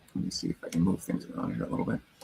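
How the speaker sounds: half-whispered, soft, breathy muttering. Speaker moving things around on screen in RStudio during a session, mumbling. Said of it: "I'm mumbling".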